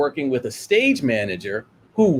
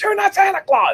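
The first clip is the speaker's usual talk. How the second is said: furious, shrill, very high scream. Retelling how an infuriated man finally lost it: imitating someone screaming. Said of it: "he finally screams".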